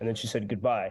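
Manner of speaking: ordinary talk, nothing marked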